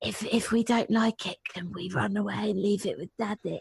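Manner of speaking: hushed, conspiratorial half-whisper. Retelling what the child half-whispered in the ear: imitating a half-whisper. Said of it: "whispers it in my ear".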